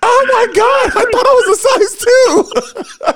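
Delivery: very high, drawn-out shrieking, wailing cry. Retelling a mall story with a friend: imitating screaming and crying. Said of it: "we just started screaming and crying, like".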